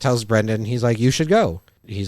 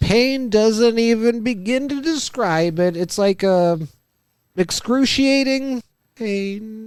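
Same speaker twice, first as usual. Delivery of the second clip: exaggerated fake suffering, very high, pain sounds drawn out; 11 semitones higher than usual. Retelling a character faking sickness to the nurse: imitating exaggerated fake pain. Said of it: "started faking being sick".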